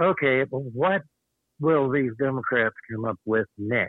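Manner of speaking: ordinary delivery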